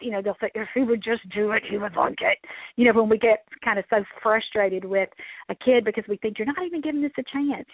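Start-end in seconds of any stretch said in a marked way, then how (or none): 0.5-2.4 play-acted, forced out between clenched teeth. Speaker imitates frustrated parents talking about their kid, through gritted teeth. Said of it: "kind of between gritted teeth".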